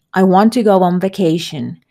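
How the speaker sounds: ordinary talk, nothing marked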